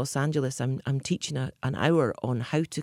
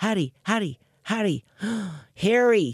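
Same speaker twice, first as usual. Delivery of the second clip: put-on American accent, called out loudly; 6 semitones higher, 4 dB louder than usual. Calling a woman's little dog, who only answered that way, in an American accent. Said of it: "say his voice in an American accent".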